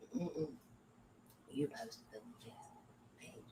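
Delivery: hushed whisper. Telling the other speaker that they posted the page: whispering. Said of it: "You don't have to whisper".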